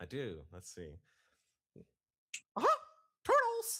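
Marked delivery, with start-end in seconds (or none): 2.6-3.8 very high, loud squeaky voice. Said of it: "You do Mickey Mouse too, don't you?".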